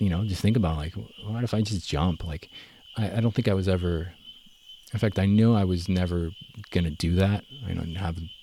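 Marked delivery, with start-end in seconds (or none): none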